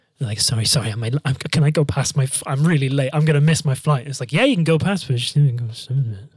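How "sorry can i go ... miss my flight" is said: put-on mumbling. Retelling what a late traveler mumbles to get past, imitating a mumble. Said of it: "You hear every person mumble something".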